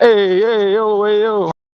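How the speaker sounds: put-on Neapolitan Italian accent, high and slow. Joking as a Russian turning into an Italian: put-on Neapolitan Italian voice. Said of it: "I'm a Russian turning into an Italian".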